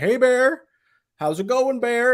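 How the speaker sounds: stern, very high voice. Speaker recounts facing a bear, retelling a stern voice to it. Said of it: "talking to it in like a stern, but kind of just like like authoritative voice".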